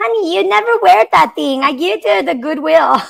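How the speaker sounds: high, strong put-on Mexican Spanish accent.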